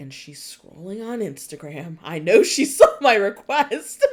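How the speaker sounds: loud audiobook narrator voice, rising. Imitating the male audiobook narrator, in a deep narrator voice. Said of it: "like in his like deep voice".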